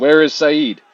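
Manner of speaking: full-volume, very loud, high-pitched shout. Searching a deserted barracks for saeed in character: shouting really loudly. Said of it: "I'm just gonna shout really loudly".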